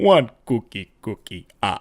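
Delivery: slow, drawn-out vampire puppet voice. After a failed evil laugh, showing how the Count sounds, imitating the Count. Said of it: "I sound like that Count from Sesame Street".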